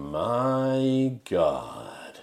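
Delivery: badly acted wooden amazement, drawn-out "my". Retelling a film scene where a government man reacts: imitating badly acted amazement. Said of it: "in the worst bit of acting of being amazed and surprised".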